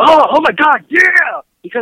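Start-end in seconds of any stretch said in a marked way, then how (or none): 0.0-0.8 very high, loud, joyful screaming. Describing a favorite scene where a hero finds her powers, imitating Anissa's happy screaming. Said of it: "just screaming like".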